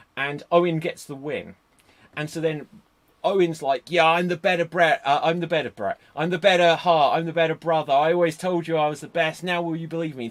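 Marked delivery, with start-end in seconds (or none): 3.8-10.2 whiny, complaining, gloating voice. Retelling a wrestler's gloating promo after a win: imitating Owen Hart's whiny voice. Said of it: "coming across so whiny".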